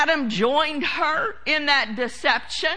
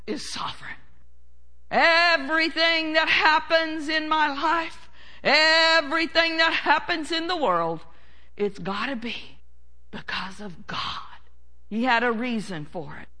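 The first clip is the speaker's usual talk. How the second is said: mock pious, reverent, solemn put-on voice. Speaker mimicking what religious people say about God, in a pious religious voice. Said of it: "in their religious voice".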